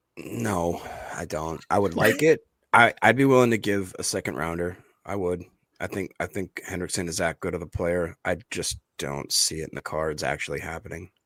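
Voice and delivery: low, resigned, deflated, defeated tone. Asked whether the team has a real shot at a player, answering in a defeated tone. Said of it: "There's so much defeat in your voice".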